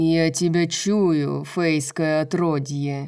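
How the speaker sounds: growl like grinding stones. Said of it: "прорычал Мордок. Его голос был похож на грохот камней".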